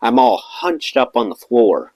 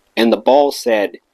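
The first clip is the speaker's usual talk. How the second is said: ordinary talk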